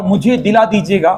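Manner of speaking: usual speaking voice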